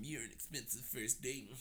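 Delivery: mock whiny voice, low and soft.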